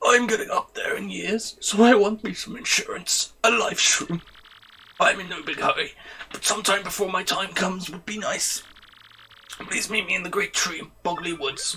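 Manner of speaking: put-on elder character voice. Reading a side quest request from the Puny Elder: put-on Puny Elder voice. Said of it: "I still don't remember the voice for her".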